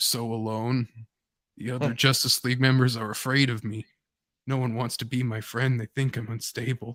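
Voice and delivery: whisper. Retelling a comic scene where one hero whispers close to another's ear: retelling a whisper. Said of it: "he whispers close to his ear and he's like".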